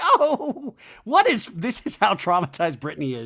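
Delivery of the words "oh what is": very high, loud giggling squeal. Retelling a reality show scene, imitating Brittany giggling. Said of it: "she giggles like".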